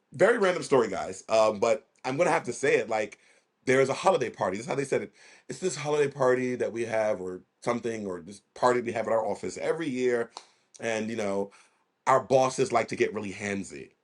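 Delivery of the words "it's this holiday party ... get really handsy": normal talking voice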